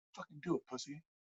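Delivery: barely audible, very hushed, up-close voice. Retelling a fight with an old man, up close to his face, retelling a quiet taunt. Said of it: "as quietly as possible".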